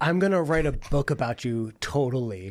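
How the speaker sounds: mock annoying, pretentious American voice. Imagining a pretentious, annoying American aid worker: put-on pretentious American aid worker voice. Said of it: "the most pretentious, annoying American aid worker being like".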